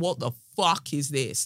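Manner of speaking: normal talking voice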